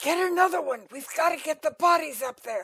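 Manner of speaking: stage whisper that carries. Voicing a cultist who urges a disguised player to fetch bodies: loud whisper. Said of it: "he turns and kind of loud whispers to you".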